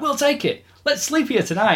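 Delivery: very high, excited, put-on childlike voice. Retelling a scene where Ray jumps at buying the firehouse: imitating enthusiastic Ray. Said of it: "he's all enthusiastic and Ray's like".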